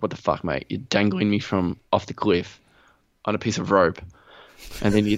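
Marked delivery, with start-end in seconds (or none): none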